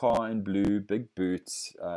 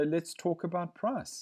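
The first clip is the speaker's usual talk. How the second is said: empathetic, soothing, comforting customer-service tone, slightly raised; 9 semitones higher, 4 dB quieter than usual. Demonstrating how to repeat a price objection back, comforting, empathetic tone. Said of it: "Comforting tone of voice".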